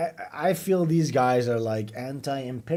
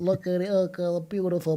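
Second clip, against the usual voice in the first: put-on meek voice, pitched higher; 6 semitones higher than usual. Mocking a tour video by imitating its narrator: Epstein impression. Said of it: "Epstein has this Woody Allen-y meek".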